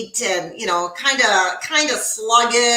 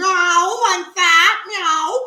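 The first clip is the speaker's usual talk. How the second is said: high, slow, drawn-out meowing cat voice; 8 semitones higher than usual. Imitating how a pet cat meows: imitating Maze the cat meowing. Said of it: "that's how Maze started meowing".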